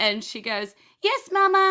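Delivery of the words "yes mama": shrill, very high, very loud talking toy doll voice. Voicing a little doll that answers its owner: doll's voice replying.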